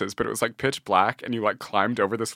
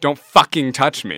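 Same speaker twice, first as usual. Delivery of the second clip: hard, loud, emphatic repeated words; 3 semitones higher, 7 dB louder than usual. Retelling a friend repeating himself at a dance party: imitating Ian saying it more emphatically. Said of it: "more emphatically".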